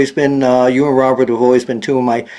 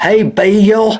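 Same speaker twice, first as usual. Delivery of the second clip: put-on high Southern accent, one word stretched into two syllables; 7 semitones higher than usual. Telling a guest how they greet him when calling, Southern accent, two-syllable Bill. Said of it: "who says my name in 2 syllables".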